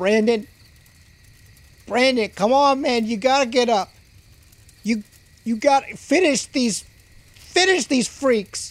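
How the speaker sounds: high, desperate, pleading crying out. Voicing a character urging a fallen ally to get up, crying out. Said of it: "Zeke cries out".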